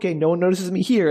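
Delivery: plain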